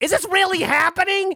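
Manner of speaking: shrill, very high, acted angry indignant disbelief. Retelling their proposal, the speaker quotes a lady's reaction, retelling the lady's angry question. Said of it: "Like, angry".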